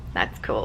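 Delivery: casual, low, understated delivery.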